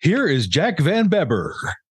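high, swooping showman announcer voice. During a pledge drive, introducing the next speaker in best announcer voice. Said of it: "And in my best announcer voice".

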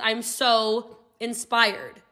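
plain

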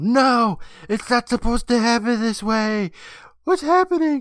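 screaming, very high, shrill and piercing. Narrating a story as a woman watches her hand turn old; screaming out. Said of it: "she screams out".

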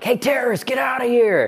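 mock sudden shout, pitched very high. Telling a story about the brother in a store, retelling a stranger's yell. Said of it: "some guy just yelled like".

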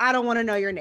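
rude, snotty, dismissive attitude. Retelling a woman's reply to a neighbor: imitating a shitty attitude. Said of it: "she said it with a shitty attitude".

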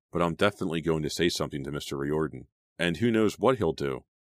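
ordinary delivery

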